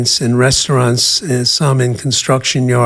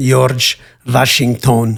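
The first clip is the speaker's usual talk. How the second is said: put-on Yiddish accent, mock-proud. Retelling his mother answering his childhood question, imitating her Yiddish accent. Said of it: "she'd proudly answer in her Yiddish accent".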